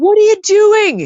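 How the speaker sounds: very high, shrill, loud scream. Recounting yelling at Joss while watching, retelling screaming at the screen. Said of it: "you're like screaming, and I'm like doing that to Joss".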